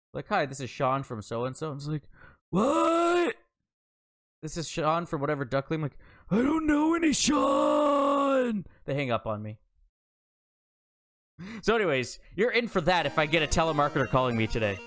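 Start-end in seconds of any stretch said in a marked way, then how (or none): 6.3-8.7 put-on old man voice, much higher, slower. Retelling answering a telemarketer's call: put-on old man voice. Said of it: "in an old man voice".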